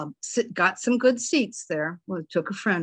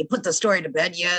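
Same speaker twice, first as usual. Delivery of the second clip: imitated gravelly announcer-style voice. Retelling what old newspaper editors used to bark: imitating a gravelly newsman voice. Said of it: "those just gravelly voices".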